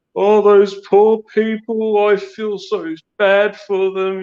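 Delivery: very high, drawn-out, put-on crocodile-tears crying. Retelling how a woman reacted to a staged rescue, imitating fake crying. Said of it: "putting all these crocodile tears on".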